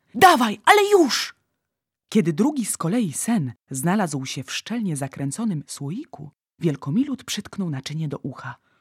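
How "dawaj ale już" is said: very high-pitched, urgent calling out. Narrator reading the giant's words as his net catches something; called out. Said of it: "Zawołał olbrzym".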